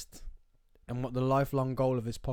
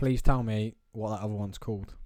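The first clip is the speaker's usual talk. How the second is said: ordinary delivery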